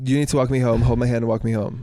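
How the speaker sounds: plain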